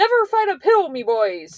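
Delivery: put-on Irish accent, sing-song and swooping. Quoting a saying Blink always used, in Blink's accent. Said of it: "Accent and everything included".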